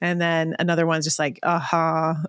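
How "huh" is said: put-on bored, uninterested child voice. Retelling how another child reacts to readings: imitating an uninterested child. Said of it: "just not interested at all".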